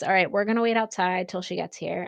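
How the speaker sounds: ordinary talk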